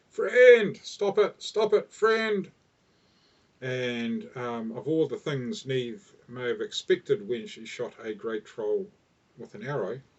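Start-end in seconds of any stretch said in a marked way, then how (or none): 0.2-2.5 slow, shrill, very loud, high, drawn-out full-throated yell. Narrating a game, speaker quotes a troll yelling at the one who shot it, retelling a yell. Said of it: "sort of turns around and yells out".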